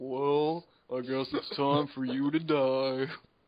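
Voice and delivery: put-on cartoon donkey voice. Voicing the new villain they will battle next campaign: Eeyore voice. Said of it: "The guy sounds like Eeyore".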